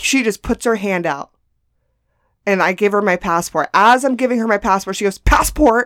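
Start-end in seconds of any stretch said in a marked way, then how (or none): 5.2-5.9 mock impatient, raised, single word. Retelling a border officer asking for a passport: imitating an impatient demand.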